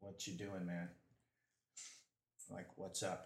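quiet, low, hushed half-whisper. Kneeling beside a man in a role-play scene, half-whispering. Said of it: "I whisper".

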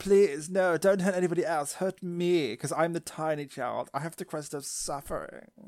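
high, loud, sophisticated, lofty heroic voice. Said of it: "Why is she so sophisticated now?".

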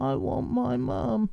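put-on acted sad, tearful little-boy voice, high and soft. Retelling what was said in a police interview, imitating James Bulger crying. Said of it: "He did the voice of the little boy crying like sad".

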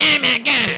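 very high-pitched, loud cartoon voice. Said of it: "Cartman doesn't have that same".

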